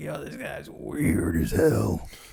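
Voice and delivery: slow, drawling, drawn-out ghoul voice. Quoting a schoolmate from high school: Beetlejuice voice.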